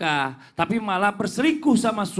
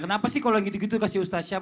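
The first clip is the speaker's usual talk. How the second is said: normal talking voice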